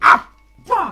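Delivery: pained yelp. Voicing a character who stubs his toe on a rock: pained curse after stubbing toe. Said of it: "hits his toe on a rock and goes".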